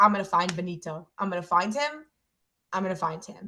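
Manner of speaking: mock teasing, playful, kidding-around joking tone. Retelling own words before a trip, retelling own joking line.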